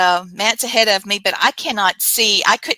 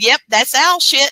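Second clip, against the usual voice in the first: mock speech through laughter, high laughing spirit voice; 5 semitones higher, 4 dB louder than usual. Describing a ghost recording, the speaker imitates the EVP laughing as it spoke. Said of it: "hear the EVP laughing and said".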